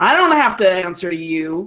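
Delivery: surly, rude, snarling tone. Voicing a rude young character who snarls at a stranger: snarling. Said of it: "he just kinda snarls".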